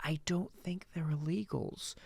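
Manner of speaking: quiet, soft, calm, even everyday speaking voice. Retelling what a woman said in a discussion, imitating quiet normal speech. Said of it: "like at a normal speaking voice".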